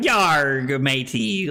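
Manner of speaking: put-on pirate voice. Retelling how Carly kept talking after playing Sea of Thieves: imitating Carly's pirate talk. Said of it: "Carly walked around for, like, two days going".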